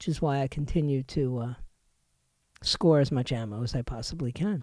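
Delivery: voice dropped low. Discussing a report on armed IRS agents, in a lowered voice. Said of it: "when I lower my voice".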